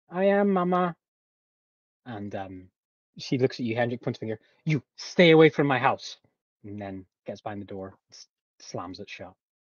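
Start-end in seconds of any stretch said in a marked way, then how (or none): 0.2-1.0 put-on little girl voice, much higher and louder. Telling a story, voicing a little girl answering from inside, in a little girl's voice. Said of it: "a little girl's voice comes back".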